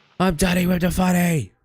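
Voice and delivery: screaming at top volume. Practicing a saying, screaming it in the loudest possible voice. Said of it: "Let's practice screaming".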